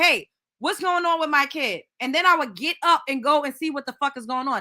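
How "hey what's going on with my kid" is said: normal talking voice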